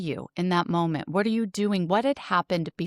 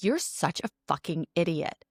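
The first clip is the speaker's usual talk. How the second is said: put-on aggressive, hostile speech; 3 dB quieter than usual. Retelling how a date insults the listener: imitating someone speaking aggressively. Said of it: "he starts to say it more aggressively".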